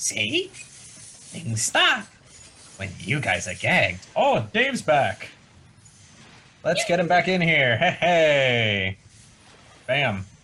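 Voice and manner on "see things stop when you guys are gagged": animated, swooping gnome voice. Voicing a gnome who watches the gagged players: gnome voice. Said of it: "the gnome just keeps watching you guys and be like".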